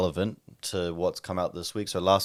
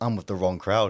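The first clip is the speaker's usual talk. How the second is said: ordinary talk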